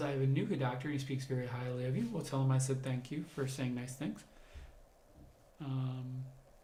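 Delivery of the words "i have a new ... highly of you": plain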